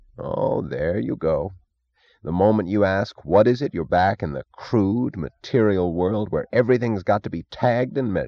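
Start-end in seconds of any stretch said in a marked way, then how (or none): none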